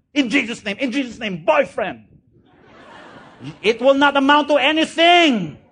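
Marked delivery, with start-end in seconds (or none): 0.2-2.1 fervent, emphatic, declaiming voice. Mocking loud prayer that lacks relationship behind it: mock shouting a prayer. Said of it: "You can shout".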